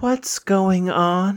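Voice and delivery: imitated small child's voice. Retelling a scare at night, imitating a small child's voice. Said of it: "this small little child's voice saying".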